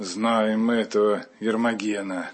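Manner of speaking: low, repulsive, very unpleasant evil-spirit voice. Retelling how an evil spirit spoke through a possessed man: low, very nasty voice. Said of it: "таким низким и очень противным голосом".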